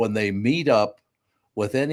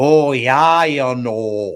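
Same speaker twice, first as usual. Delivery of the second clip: loud, very slow, fake Minnesota accent; 2 semitones higher, 7 dB louder than usual. Imitating visitors who try to speak with a Minnesota accent: imitating a fake Minnesota accent. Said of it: "try to speak with a Mo-, Minnesota accent".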